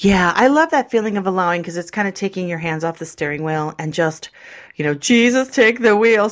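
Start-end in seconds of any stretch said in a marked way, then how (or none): 4.9-6.3 loud, proclaiming put-on preacher woman voice. Joking about letting go of control, in a put-on preacher woman voice. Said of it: "The preacher woman".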